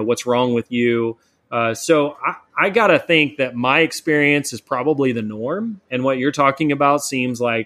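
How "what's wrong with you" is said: ordinary talk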